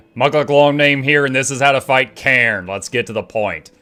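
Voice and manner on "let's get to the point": disappointed, let-down fatherly tone. Showing one of the voices he uses, disappointed fatherly voice. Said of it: "I've got the disappointed voice".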